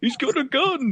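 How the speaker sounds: mock shrill, startled, very high sudden shriek. Retelling a wrestling segment, imitating Kevin Nash screaming. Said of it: "all of a sudden he just screams".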